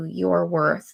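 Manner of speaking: normal talking voice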